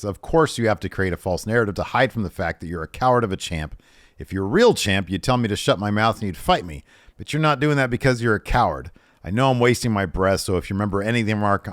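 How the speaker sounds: normal talking voice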